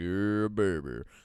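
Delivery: smooth, cool delivery. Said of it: "my best [name]".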